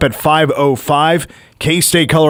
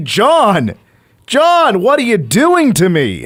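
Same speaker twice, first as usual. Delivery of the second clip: put-on screaming, called out slow and swooping; 6 semitones higher than usual. Retelling yelling at the tv while playing a video game: imitating own screaming at the tv. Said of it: "I'm screaming at the T V".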